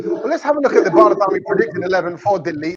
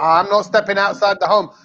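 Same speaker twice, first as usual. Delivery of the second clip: usual speaking voice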